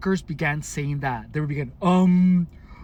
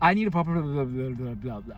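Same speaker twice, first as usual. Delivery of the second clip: put-on mumble, lower pitch; 3 semitones lower, 4 dB quieter than usual. Speaker recalling customers who purposely mumbled in front of them, imitating a mumbling customer. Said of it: "they would purposely mumble".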